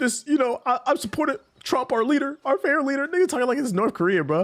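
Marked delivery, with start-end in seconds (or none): 0.0-3.1 acted crying, high, tearful, choking up. Retelling a podcast caller's call, imitating a caller crying.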